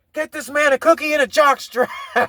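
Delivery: high-pitched hollered yell. Retelling a line a guy in a show yelled: imitating someone yelling. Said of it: "some guy in the show yell".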